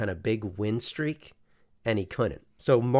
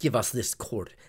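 clumsy, unconvincing, put-on German accent; 3 dB quieter than usual. Joking about german players taking over a court: bad german accent. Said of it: "did you get a German accent? That was a bad one".

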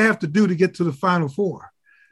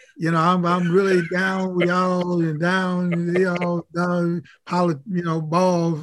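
fake, put-on Southern accent. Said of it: "with a fake Southern accent".

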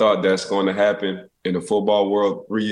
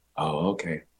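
gentle, soft-spoken, hushed voice; 4 semitones lower, 8 dB quieter than usual. Retelling a teammate's reply on finding a naked roommate: imitating a soft voice. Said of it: "in a soft voice".

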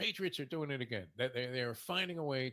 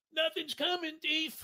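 mock scream, much higher and louder; 6 dB louder than usual. Retelling a bet going wrong, the speaker imitates a friend screaming. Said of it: "Your friend starts screaming".

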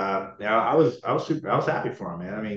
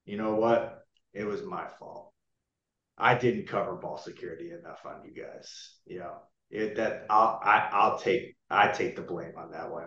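put-on, heavy, ironic, sarcastic voice; 5 dB quieter than usual. Retelling what Bill said after a loss: imitating Bill being sarcastic. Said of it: "where Bill is sarcastic".

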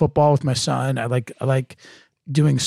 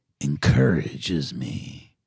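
hushed, soft movie trailer announcer voice; 11 semitones lower, 5 dB quieter than usual. Joking in conversation about doing nothing, in a movie trailer voice. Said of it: "I love this new movie trailer voice you brought out".

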